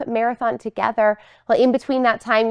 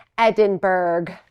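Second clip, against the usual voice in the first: put-on American mispronunciation of edinburgh, lower pitch; 5 semitones lower than usual. Showing how Americans misread a city name: imitating American mispronunciation. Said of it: "you may be tempted to read this word".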